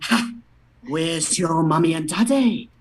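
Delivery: snide, mocking, taunting tone with a scoffing ha. In a Harry Potter skit, Draco Malfoy claps back at Harry: Draco Malfoy impression. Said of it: "Draco Malfoy claps back with".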